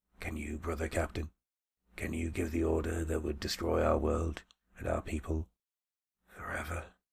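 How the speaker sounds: soft, gentle voice. Narrator reads a character's question to his brother captain: softly. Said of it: "he said softly".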